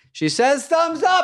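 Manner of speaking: put-on excited announcer style.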